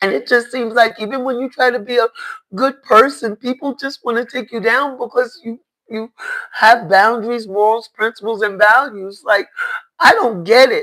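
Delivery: tearful, voice cracking. Speaker talking openly about their healing process, crying. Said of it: "I'm crying because".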